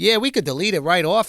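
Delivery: attempted put-on Boston accent. Speaker retells what a New England security guard said, in an attempted Boston accent. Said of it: "I can't do a Boston accent".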